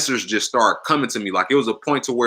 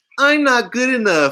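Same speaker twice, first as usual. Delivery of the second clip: whining, very high-pitched voice; 13 semitones higher, 3 dB louder than usual. Advice on beating yourself up: repeat the thought in a whiny voice. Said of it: "say it in a whiny voice, like".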